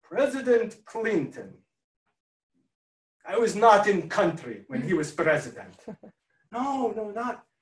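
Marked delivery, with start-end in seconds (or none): 0.1-5.7 put-on Russian-accented English. The masseuse answers the client's question, Tatiana's Russian accent. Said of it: "with a Russian accent".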